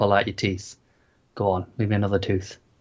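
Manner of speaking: creature voice, whispering. Imagining the show's tooth thing behind someone, whispering. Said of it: "This tooth thing behind you just whispering".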